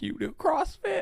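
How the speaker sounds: acted, very high, scornful mocking laughing tone. Retelling how he laughed at her for doing CrossFit, mock-laughing at her. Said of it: "just laughing at her like".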